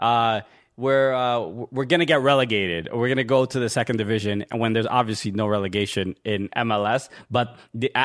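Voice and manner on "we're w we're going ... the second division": ordinary talk, nothing marked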